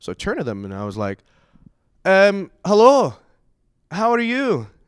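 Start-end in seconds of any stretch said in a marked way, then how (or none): 2.7-4.6 slow, put-on, tentative Scottish accent. Retelling turning to some girls to try out an accent, fake Scottish accent. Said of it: "I'm gonna try this accent stuff out".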